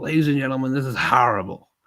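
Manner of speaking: put-on American accent on horrible. Quoting a man whose way of saying horrible puzzles the speaker: imitating an american accent. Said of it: "What American accent is that says horrible?".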